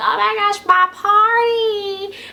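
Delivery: high-pitched, slow, dramatic wail. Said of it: "Cheryl's like".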